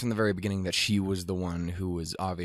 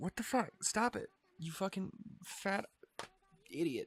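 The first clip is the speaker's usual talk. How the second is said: soft speech through tears; 13 semitones higher, 8 dB quieter than usual. Reacting to an episode and realizing they're tearing up, crying while talking. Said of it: "I'm actually fucking crying".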